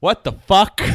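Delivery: shouted at full volume, very loud and high. Opening the episode discussion right at the top, loud shout. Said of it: "That's loud".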